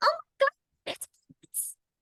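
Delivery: tiny, squeaky voice, very high. Retelling a young fan at a convention spotting the cosplay: tiny little voice. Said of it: "she goes in the tiniest little voice I've ever heard".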